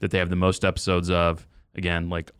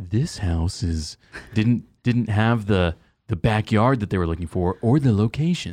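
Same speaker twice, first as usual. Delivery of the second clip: put-on TV voiceover narrator voice; 2 semitones higher than usual. Mocking a disliked TV show voiceover, as the House Hunters voiceover lady. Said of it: "That was a great impersonation".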